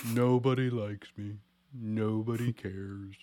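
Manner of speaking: cartoon donkey character voice. Teasing a friend by comparing them to a character: Eeyore voice. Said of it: "You're like Eeyore from Winnie the Pooh".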